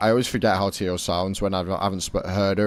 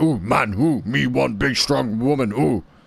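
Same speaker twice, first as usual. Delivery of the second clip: put-on Eastern European accent with broken English; 4 semitones higher than usual. Describing how Bulgarians talk, in a mock Eastern European accent. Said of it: "Bulgaria's like Eastern Europe, so they're always like".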